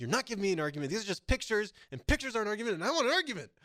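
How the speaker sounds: loud, high-pitched, insistent, exasperated, frustrated yelling. Retelling a loud, frustrated student at a protest: imitating a student yelling. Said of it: "he was yelling at her, like".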